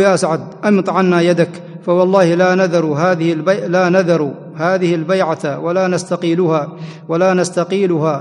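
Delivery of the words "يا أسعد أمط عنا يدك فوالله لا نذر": plain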